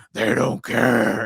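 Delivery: exaggerated, rough, creaky hero voice. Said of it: "it became very exaggerated".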